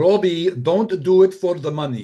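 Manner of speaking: put-on very loud, high, imperfect Hungarian accent. Quoting the speaker's parents telling Robbie something, in a put-on Hungarian accent. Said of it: "since we're doing their accent".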